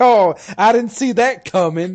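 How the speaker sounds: mock very high sarcasm. Retelling own past line in a game, still joking: imitating own sarcastic remark. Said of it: "I was still sarcastic".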